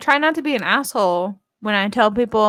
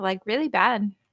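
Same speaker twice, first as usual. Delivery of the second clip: plain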